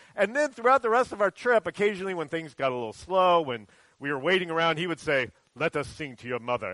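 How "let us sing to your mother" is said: put-on Kenyan accent, lower and quieter. Retelling a trip and quoting Joshua, imitating Joshua's Kenyan accent. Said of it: "that's my Kenyan accent".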